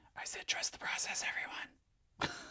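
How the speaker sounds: hushed whispered aside. Speaking to everyone while trying to make the pictures work, whispering. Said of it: "I don't know why I'm whispering".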